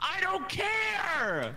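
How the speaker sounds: furious, high, slow, angry shout.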